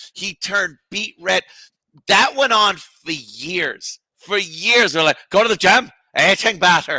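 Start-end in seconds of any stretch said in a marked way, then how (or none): 5.3-7.0 put-on, fake Irish accent. Retelling how others kept mocking the line: imitating Jim Norton's put-on Irish accent. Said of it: "He turned Irish in front of him".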